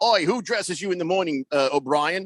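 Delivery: teasing, put-on Australian accent. Retelling what an Australian coach said: imitating an Australian accent. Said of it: "He was Australian".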